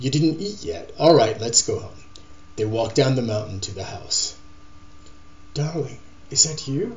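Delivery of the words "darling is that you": gentle, soft, slightly high call. Sheila calls to Paul from her room, calling softly. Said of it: "Sheila called softly from her room".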